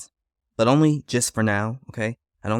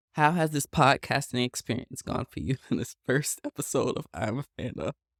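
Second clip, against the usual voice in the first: talking through laughter, quieter; 5 dB quieter than usual. Asking the sister how the first podcast episode went, laughing while talking. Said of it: "Why are you laughing?".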